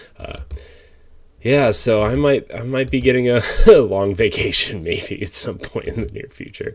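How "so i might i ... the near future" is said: high, raised voice, words broken up by laughter. Talking about a possible long vacation due to lockdown, laughing while talking. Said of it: "I don't know why I'm laughing".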